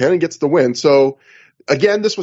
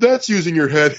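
mock offhand, dismissive, snarky put-down; 3 semitones higher than usual. Retelling how Nigel mocked the crowd after a headbutt, imitating Nigel's dismissive quip. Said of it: "he goes in a dismissive voice".

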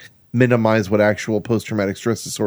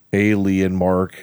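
imitated deep drawling voice; 2 semitones lower than usual. Imitating Seth's voice for the others: Seth's deep drawling voice. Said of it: "the weird drawl to it".

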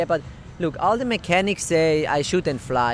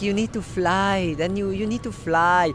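mock Italian-accented English; 4 semitones higher than usual. Retelling a man's repeated advice to the speaker, in his Italian-accented English. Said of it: "he says it in his Italian English".

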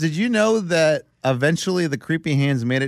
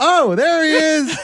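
mock excited blurt, very high and loud; 12 semitones higher, 4 dB louder than usual. Retelling how a guest blurted during the ceremony: imitating a loud excited blurt. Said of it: "loud to where everyone heard it".

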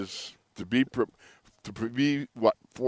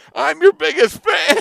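very loud, very high, shrill, raspy, rough yell; 12 dB louder than usual. Retelling a friend yelling at a band in the stands: imitating a friend yelling. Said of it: "he's yelling".

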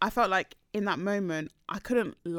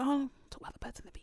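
put-on whisper, higher and quieter; 6 semitones higher, 8 dB quieter than usual. Retelling how mum brought up the birds and the bees: imitating mum whispering. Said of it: "Why are you whispering?".

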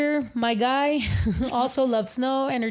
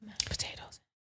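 mock whisper, lower and quieter; 3 semitones lower, 16 dB quieter than usual. Imitating another speaker describing a dish: imitating someone whispering. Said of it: "She's like".

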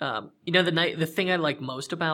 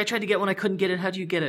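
mock yelling in woman's voice, higher pitch; 6 semitones higher than usual. Telling a story about a woman in a store, imitating her yelling. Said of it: "she's like yelling at him across the store".

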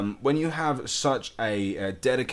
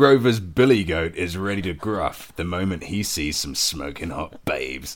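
exaggerated put-on bass voice, deep, loud, reading; 4 semitones lower, 5 dB louder than usual. Reading a joke aloud on a show: put-on deep voice. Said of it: "I'm going to read it in deep voice".

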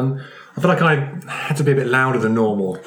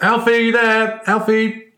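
very high, very slow, drawn-out shouted hollering; 10 semitones higher than usual. Searching big rooms for a missing person, shouting a name. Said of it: "I will just shout out".

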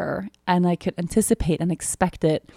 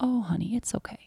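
gentle, soft, kind, compassionate, reassuring voice; 4 semitones higher, 8 dB quieter than usual. Describing the inner voice that answers their critical one, imitating a kind voice. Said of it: "this kind voice, this compassionate voice that goes".

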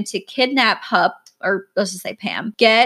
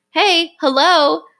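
mock high, petulant, bratty childish yell; 7 semitones higher, 4 dB louder than usual. Retelling a caller's first words on a 911 call: imitating Pam yelling like a petulant child. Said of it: "she's like a petulant child, like, yelling to get her sister's attention".

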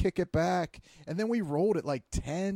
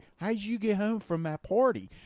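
put-on dad voice, Pittsburgh accent; 3 semitones higher than usual. Imitating two dads asking about the drive home: Pittsburgh accent. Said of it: "what the type of shit two dads are like".

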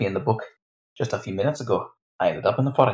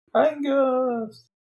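very high, long, drawn-out calling out. A player voices their character calling out for someone, calling out a name loudly. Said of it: "Marie will call out for Angus".

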